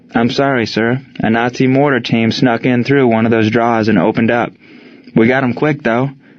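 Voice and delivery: plain reading voice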